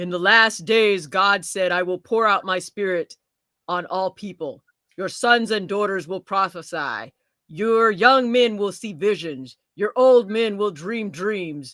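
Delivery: deep, serious, solemn, weighty reading voice. Reading a scripture passage aloud to listeners, in a serious voice. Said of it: "Now I have to have the serious voice".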